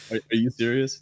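normal talking voice

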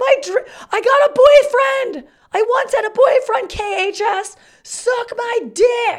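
acted-out screaming. Retelling driving past their old high school, re-enacting screaming at it. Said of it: "I screamed at them".

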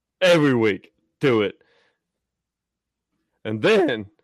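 cracking, breaking voice. Promoting this show's upcoming episode, the speaker's voice cracks. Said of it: "that's my voice cracks".

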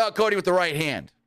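ringside commentator-style delivery. Retelling how the commentator called the punch: imitating Michael Cole. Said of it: "He's like".

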